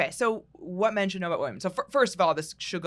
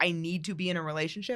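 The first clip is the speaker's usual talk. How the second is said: usual speaking voice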